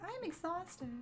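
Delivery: very high, small, squeaky little voice. Speaker repeats the camera's low-battery meme line for chat, in a little voice. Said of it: "I just repeat it in my little voice".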